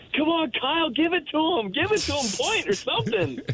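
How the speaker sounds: very high, eager, excited screaming. Recalling sitting on the bench during a game, retelling screaming encouragement at a player. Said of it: "I'm like screaming at him like".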